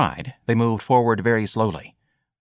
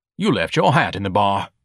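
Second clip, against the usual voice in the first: usual speaking voice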